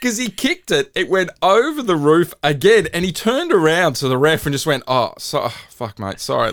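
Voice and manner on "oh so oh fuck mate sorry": fake sorry-sounding sports player voice. Retelling how a player apologised to the ref after losing a ball: imitating Mitchell Moses apologising.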